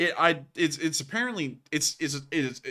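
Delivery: stammering with false starts piling up. Answering a co-host about the viewer count jumping around, stuttering. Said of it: "I'm stuttering so bad".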